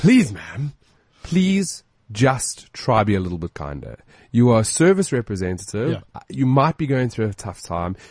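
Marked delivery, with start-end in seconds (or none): 0.0-4.0 mock serious, stern, firm no-nonsense tone. Retelling what you said to a service representative, mock-stern. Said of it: "which I said in a very stern voice".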